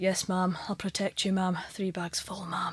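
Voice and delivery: put-on hushed, flat, level, robotic voice with Scottish accent. Mimic the show's bodyguard addressing the Home Secretary, in a Richard Madden sexy Scottish robot voice. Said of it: "He's like a sexy Scottish robot".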